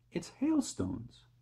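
hushed whisper, eager and excited. Narrator reads James's line in a story, an excited whisper. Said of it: "whispered James excitedly".

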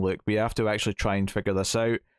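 ordinary delivery

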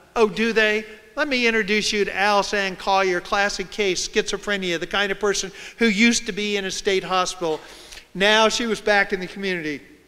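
ordinary delivery

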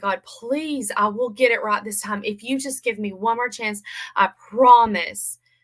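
earnest, begging, bargaining pleading tone. Recounting praying to God for one more chance: retelling a plea. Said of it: "as I'm pleading".

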